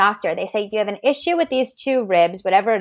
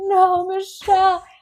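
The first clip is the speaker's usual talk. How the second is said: put-on very high, tearful crying voice; 11 semitones higher than usual. Retelling how someone reacted when the speaker left: imitating someone crying. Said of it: "she's crying".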